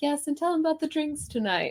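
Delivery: very high, lazy, pampered, lounging dramatic voice. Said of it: "envisioning this woman, like, laying in bed being like".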